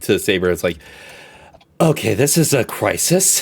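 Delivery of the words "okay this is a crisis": hushed, barely voiced whisper. Voicing a character speaking quietly to another character: whispering. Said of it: "whispers to".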